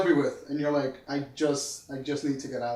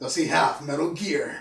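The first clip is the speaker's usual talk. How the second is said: bad put-on gruff soldier voice. Picturing a dad asking a question: bad Snake impression. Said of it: "that was a really bad Snake impression".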